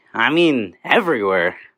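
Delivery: low, dry, dripping sarcasm. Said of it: "You guys don't get sarcasm".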